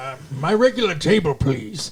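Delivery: put-on cranky, demanding, grumpy old man voice. Retelling a scene where a customer asks for his table: imitating a grumpy old man. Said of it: "this old grumpy man comes in".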